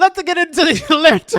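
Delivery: attempted Scottish accent. Attempting a Scottish accent at the other speaker's urging, attempted Scottish accent. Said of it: "I was wanted to try to do a Scottish accent".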